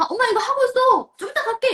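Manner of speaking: high, loud voice calling out from afar. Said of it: "멀리서 이렇게 보면서".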